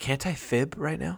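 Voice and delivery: slow, very quiet half-whisper. Recalling a game where Courtney half-whispered to Josh; retelling a half-whisper. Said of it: "when Courtney whispered to you".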